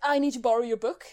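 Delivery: hasty, very rushed, blurted with urgency. Narrating Silver, who stares past the woken character: very rushed tone. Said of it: "he just says in a very rushed tone".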